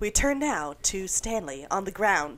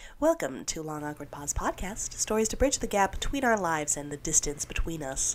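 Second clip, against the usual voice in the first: even, unhurried, calm public radio announcer voice. Podcast host reads the show's blurb as an NPR person: NPR voice. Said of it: "because I love using my NPR voice".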